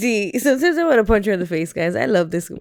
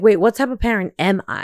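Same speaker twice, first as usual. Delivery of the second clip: usual speaking voice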